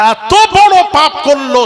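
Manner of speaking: outraged, emphatic, high, loud and slow.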